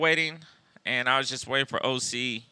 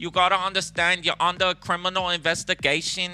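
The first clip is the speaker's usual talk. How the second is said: put-on high-pitched New York accent; 5 semitones higher than usual.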